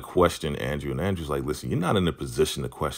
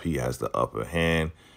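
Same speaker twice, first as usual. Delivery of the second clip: ordinary delivery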